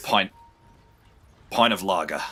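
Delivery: put-on very deep voice. During a Peaky Blinders voice bit, doing Arthur from Peaky Blinders voice. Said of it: "Is that Arthur?".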